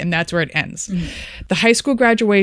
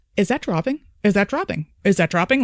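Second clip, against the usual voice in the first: panicked, alarm building, repeated over and over; 2 semitones higher than usual. Retelling a storm-chase video as the storm appears, imitating someone panicking. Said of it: "she's starting to panic".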